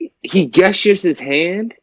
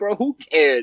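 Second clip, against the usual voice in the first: ordinary talk, nothing marked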